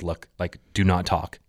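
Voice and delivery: put-on stern, authoritative voice. Retelling telling someone to stop talking: retelling a stern command. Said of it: "And I was serious".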